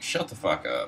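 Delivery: normal talking voice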